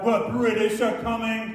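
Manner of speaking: usual speaking voice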